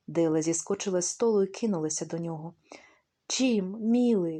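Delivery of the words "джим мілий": loud exclaiming, crying-out voice. She jumps off the table and rushes to him, exclaiming. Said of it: "вигукнулась вона".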